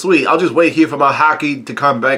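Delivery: ordinary delivery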